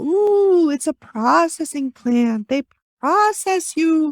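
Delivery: put-on high, spooky female ghost voice. Retelling what a woman heard a female ghost say, put-on female ghost voice. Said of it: "Probably not in that voice. I just made it fun for myself".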